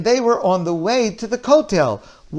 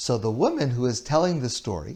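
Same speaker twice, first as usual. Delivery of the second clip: ordinary talk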